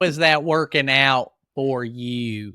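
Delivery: very loud, slow, pointed, booming delivery. Suggesting how to question people who won't ask for help: Dr. Phil impression. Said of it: "So you Doctor Phil them".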